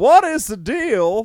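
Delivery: high, loud, very slow with "deal" stretched out. Nested impression of one person imitating another, Jerry Seinfeld impression. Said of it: "I could do an impression of Cole doing an impression of Jerry Seinfeld doing an impression of Morgan Freeman".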